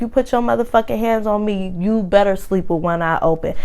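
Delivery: ordinary delivery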